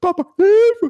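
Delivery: put-on frightened small child crying out, very high scream. A parent retells how their child cries out for help, imitating a child screaming. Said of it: "aber er traut der Sache nicht und schreit".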